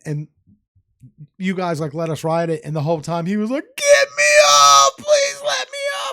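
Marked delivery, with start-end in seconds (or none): 3.8-6.1 mock sobbing, very high, drawn-out pleading crying scream. Speaker recalling someone on a fair ride, imitating screaming and crying. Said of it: "He was screaming and crying".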